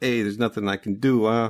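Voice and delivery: odd put-on New York accent. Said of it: "a weird New York kind of thing".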